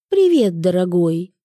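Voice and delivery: ordinary delivery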